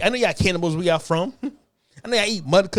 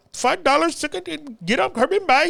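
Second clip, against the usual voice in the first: mock Indian accent, pitched higher; 7 semitones higher than usual. Imitating how everyone in her household talks: imitating an indian accent. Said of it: "everyone in the household talk like".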